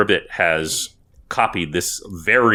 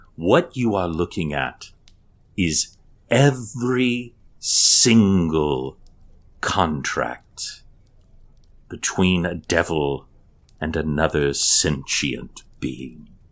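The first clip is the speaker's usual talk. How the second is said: reverent, awed voice, drawn out. A game master voices a guide addressing the party in a holy place: reverent voice. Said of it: "there is reverence in his voice".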